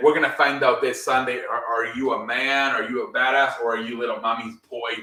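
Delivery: ordinary delivery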